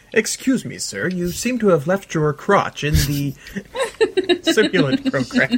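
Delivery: high voice that lifts and swoops. Imagining a politer on-set reaction, imitating Robert Llewellyn. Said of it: "that Robert Llewellyn would have been able to".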